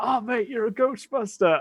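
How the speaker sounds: put-on slurred drunk voice. Speaker retells a guy coming up to them, imitating a drunk guy. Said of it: "this guy who is drunk".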